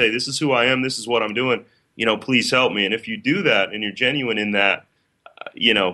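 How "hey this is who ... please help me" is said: ordinary talk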